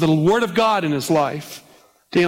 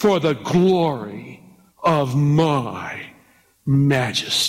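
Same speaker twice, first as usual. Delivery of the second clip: very slow, low, lingering long on "my"; 4 semitones lower than usual. Reading verse 30 aloud the way he must have said it, slow. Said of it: "I say it slow like he must have said".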